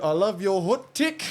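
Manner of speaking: put-on high New Zealand accent, take as tick. Repeating how a message read out "hot take": imitating a kiwi accent. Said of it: "when he went to say hot take and it said".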